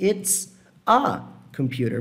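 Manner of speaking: word a stressed and drawn out slowly.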